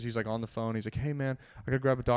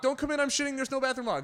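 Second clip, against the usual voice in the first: imitated alarm-like scream, higher-pitched; 13 semitones higher than usual. Retelling a panicked moment in a bathroom: retelling a planned alarm-like scream. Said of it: "I was just gonna scream that like an alarm at them".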